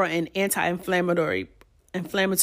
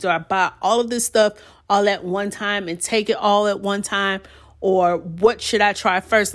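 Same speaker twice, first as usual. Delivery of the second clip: ordinary delivery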